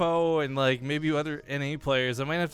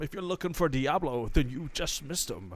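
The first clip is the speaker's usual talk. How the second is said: put-on old storyteller voice. Doing a Deckard Cain voice for a co-caster: Deckard Cain voice. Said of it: "I wasn't really going for Deckard Cain".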